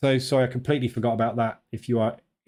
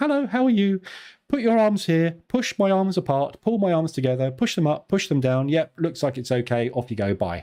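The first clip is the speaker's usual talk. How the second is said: high put-on female voice; 5 semitones higher than usual. Imitating the physio during a quick strength test: put-on female voice imitating physio. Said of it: "that's the only female voice I've got".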